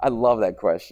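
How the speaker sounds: sarcastic tone. Addressing a student who keeps pushing buttons, sarcastic. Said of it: "I'm being sarcastic".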